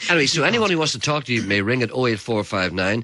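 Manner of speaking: ordinary talk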